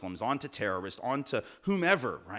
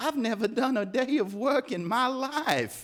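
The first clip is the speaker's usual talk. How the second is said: put-on old Southern accent; 11 semitones higher, 4 dB louder than usual. Retelling what a landowner said, in a Scarlett-like accent. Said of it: "I'm just going to do this accent".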